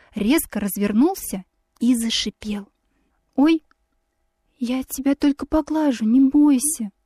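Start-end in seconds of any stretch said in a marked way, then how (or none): 3.4-6.9 tender, gentle, affectionate, higher. Narrator reads himself reaching out to a hissing swan, gentle, affectionate. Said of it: "Голос мой звучал ласково".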